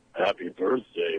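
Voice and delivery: weird put-on voice, low, slow and spooky.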